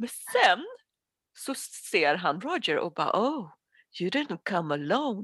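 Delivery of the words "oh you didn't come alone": eerie, spooky, creepy put-on character voice. Retelling a scene, the speaker quotes a man who spots someone, in a creepy voice. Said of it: "har en fett creepy röst".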